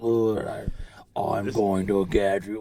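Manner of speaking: put-on villain voice. Imitating a wrestler's promo that sounded like a horror movie: imitating a villain voice. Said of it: "He had that villain voice to him".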